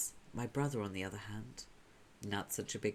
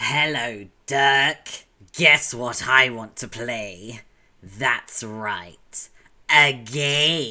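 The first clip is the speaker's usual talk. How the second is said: full gremlin voice, louder; 18 dB louder than usual. Reading a comic aloud, voicing the brother: full gremlin mode voice. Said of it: "'cause it's full gremlin mode".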